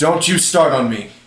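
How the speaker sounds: loud, sharp, angry snapping tone. Accused of failing to take care of a kid, the character turns on the accuser: turning on him. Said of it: "turn on him".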